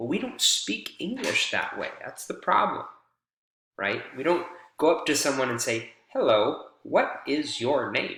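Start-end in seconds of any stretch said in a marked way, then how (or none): 6.1-8.2 stiff machine voice, gaps between every word. Speaker showing how spoken English should not sound, in a robotic Siri-like voice. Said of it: "That sounds like a robot or a Siri".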